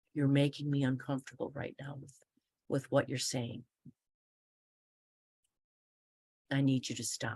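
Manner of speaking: low, even, quiet, neutral, unapologetic tone. Showing how to set a boundary with an inappropriate patient: low voice, even tone. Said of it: "a low voice, an even tone".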